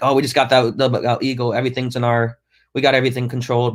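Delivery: ordinary talk, nothing marked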